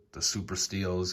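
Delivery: ordinary delivery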